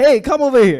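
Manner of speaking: loud high-pitched screaming. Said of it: "you scream".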